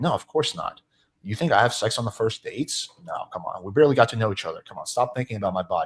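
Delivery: mock-earnest, amplified, sarcastic tone. Showing how to answer a date's remark with sarcasm: sarcastic. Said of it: "agree and amplify using sarcasm".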